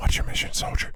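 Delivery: close, whispered voice. Voicing an unseen figure whispering into a player's ear: whispering in your ear. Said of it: "got it over your right ear".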